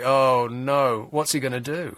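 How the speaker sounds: put-on, held-back, drawn-out mild yell. Retelling watching a ceremony on TV: retelling a shout at the TV. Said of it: "shouting at the T V".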